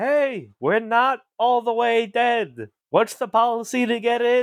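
booming, hugely loud voice, pitched high. A player's character uses thaumaturgy to make their voice loud: magically loud voice. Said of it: "use thaumaturgy. Make my voice loud".

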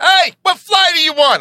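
mock yelling voice, pitched very high and loud. Retelling a phone call about flights: Richie Byrne voice, yelling. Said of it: "that Richie Byrne voice".

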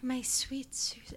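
hushed, creepy, breathy whisper. Retelling how a man from an audio journal spoke: imitating his creepy way of talking. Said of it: "he talks like this".

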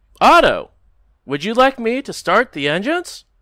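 high announcer voice. Voicing Owl speaking to Otto over the intercom: voicing Owl. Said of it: "Owl will speak over the intercom".

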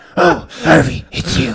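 dark, brooding superhero voice. Riffing on the movie's characters, greeting Harvey in a Batman voice. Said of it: "That's the one voice I can do really well".

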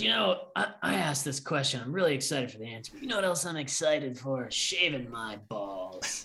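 strained, forced hype voice, straining hard throughout. Retelling how a podcast guest promotes products: Steve-O impression. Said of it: "You do a pretty good Steve-O".

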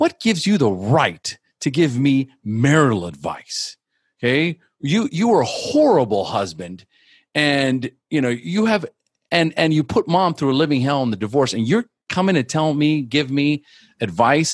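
heated, stumbling angry outburst, pitched high. Retelling confronting his drunk father over marital advice, imitating himself yelling angrily. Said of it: "There was a lot of yelling".

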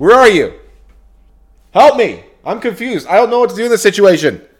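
frantic, very high, rushed, panicked calling out. Speaker calls out to Siri for help, not knowing what to do: panicked. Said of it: "I'm in a panic".

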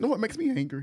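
very high voice, breaking and cracking. Speaker talking with others about criticism, voice cracking. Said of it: "My voice cracked".

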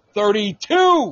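thrilled, high, loud burst of excitement. Announcing the show's new ranking: excited. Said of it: "that shit excites me".

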